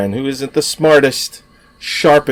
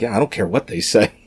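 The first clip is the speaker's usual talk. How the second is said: put-on quiet muttering under breath; 2 semitones lower, 5 dB quieter than usual. Retelling a film character drawing lines on a body chart: imitating muttering under breath. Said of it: "he's just talking under his breath".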